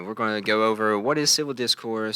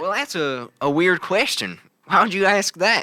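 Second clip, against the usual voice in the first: much higher pitch and louder voice; 8 semitones higher, 5 dB louder than usual. Retelling a conversation with a man from Logan, imitating his Logan accent. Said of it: "I changed my accent because Logan accent".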